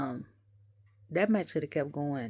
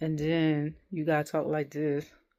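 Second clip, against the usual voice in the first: ordinary talk, nothing marked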